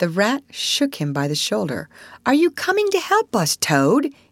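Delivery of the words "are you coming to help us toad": stern, insistent, pitched very high. The Rat shakes Toad by the shoulder, stern demand. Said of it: "he demanded sternly".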